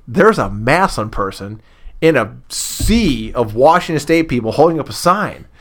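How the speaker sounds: ordinary delivery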